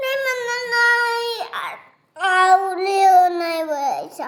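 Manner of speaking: loud crying, sobbing wail.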